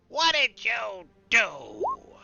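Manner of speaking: scratchy ragged voice. A game master voices someone calling from the north, in a scraggly voice. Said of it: "you hear a scraggly voice from the north".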